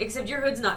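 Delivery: ordinary delivery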